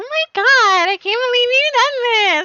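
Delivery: very high, played-up fake enthusiasm. Redoing own past line as if playing it up: put-on enthusiasm. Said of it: "it must have been when I was putting on, like".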